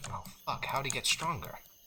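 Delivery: cursing under the breath. Voicing a character seeing more skeletons rise: cursing under his breath. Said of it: "sort of curses under his breath".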